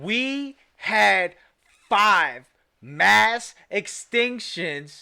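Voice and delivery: yelling loudly. Repeating a line from a trailer over and over: screaming. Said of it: "apologies for screaming".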